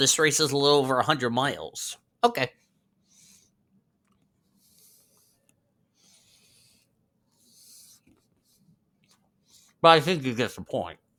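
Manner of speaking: speaking with mouth full of food. Talking to viewers while eating: talking with food in mouth. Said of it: "Sorry if you're hearing me talk with food in my mouth".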